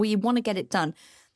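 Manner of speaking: urgent, tense, under-pressure intonation. Describing team perfectionism, speaker shifts intonation to highlight pressure: tense, pressured intonation. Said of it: "I'm changing the intonation of my voice there as I'm talking to highlight pressure".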